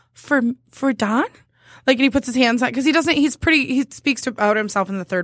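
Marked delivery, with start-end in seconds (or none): 0.2-1.3 put-on cute sweet little child's voice. Speaker retells what a four-year-old boy said back to her; cute little voice. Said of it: "he has this cute little voice".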